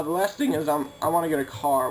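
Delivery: groggy just-woke-up voice, cracking mid-sentence. Speaker making a video just after waking up, listing plans: voice cracking. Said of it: "did my voice just crack?".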